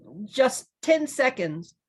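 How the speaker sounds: very high-pitched, eager, excited outburst. Answering the nervously pacing bee's question; excited cry. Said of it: "cried Milo excitedly".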